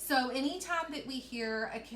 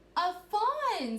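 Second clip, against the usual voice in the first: thrilled, eager, high-pitched and loud; 9 semitones higher, 7 dB louder than usual. Reading a story aloud as Kelsey looks under the porch, excited. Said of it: "I made my voice sound excited".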